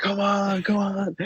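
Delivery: acted very high, very slow, stretched-out hype scream. Recalling a team hyping each other up in front of other teams; imitating a team scream. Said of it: "We were just screaming like".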